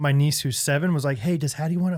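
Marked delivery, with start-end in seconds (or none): 1.2-2.0 put-on whisper. Retelling how a seven-year-old niece asked a question: imitating niece whispering. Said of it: "she's, like, whispering to me".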